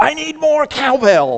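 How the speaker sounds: very high, swooping, drawn-out acted yell. Describing a YouTube clip, the speaker acts out the producer: retelling Bruce's yell. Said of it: "yells out".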